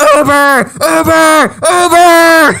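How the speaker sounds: mock screaming, high and drawn-out yelling. Speaker retells running after a driver after losing his phone: retelling a scream. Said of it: "So I'm screaming".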